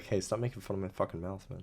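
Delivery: put-on irritable, fed-up, hushed angry grumble. Speaker acts out what an always-angry figure said: mock-angry complaint. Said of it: "That's why he was so mad all the time".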